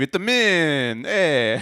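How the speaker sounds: loud, fake, put-on Italian accent. Joking on a show, saying a word in a put-on italian accent. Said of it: "I'm saying it with my Italian accent".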